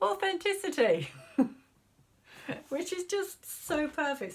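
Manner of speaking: laughing through the words, very high, delighted. Reading out a pulled card for Aquarius, laughing while talking. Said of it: "Sorry for laughing".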